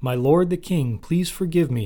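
pleading, imploring, begging tone. Shimei falls down before the king and begs forgiveness, pleading. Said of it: "he pleaded".

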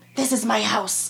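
words spat out aggressively. Narrator voicing a man claiming his house as two men fight; spitting the words. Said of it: "Loveday spits".

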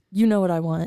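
ordinary delivery

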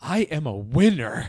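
over-the-top comic voice, loud and drawn out. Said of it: "In, like, the most Jim Carrey voice".

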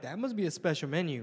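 ordinary delivery

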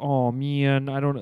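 mock embarrassed tone. Retelling a movie character's reaction: imitating an embarrassed shucks. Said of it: "embarrassed shucks".

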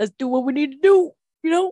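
put-on loud, old-time 1920s gangster voice. Teasing the other person about how they talk about sex, in a 1920s gangster voice. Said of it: "You're like".

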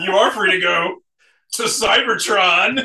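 high, loud put-on voice. Retelling a cartoon scene, quoting Soundwave speaking to Spike: Soundwave voice. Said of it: "He comes up with the Let's Group Tonight voice again".

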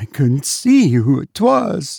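voice full of horror, horror-stricken. Narrating Cordelia's reply to her mistress, in a horror-stricken voice. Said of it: "in a horror-stricken voice".

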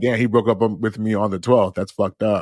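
plain

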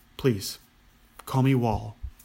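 plain

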